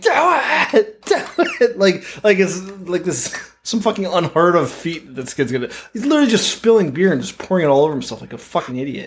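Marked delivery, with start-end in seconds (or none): 0.0-1.8 acted, very high, very slow, drawn-out yell. Retelling how someone hyped up a beer stunt: imitating Buzz screaming. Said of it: "Buzz is just screaming".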